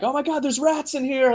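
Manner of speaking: high-pitched, frantic, terrified, panicked scream. Describing a movie scene where a man in a cage screams, retelling a scream. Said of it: "he starts screaming".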